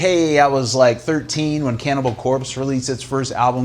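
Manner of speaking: normal talking voice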